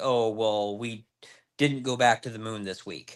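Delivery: plain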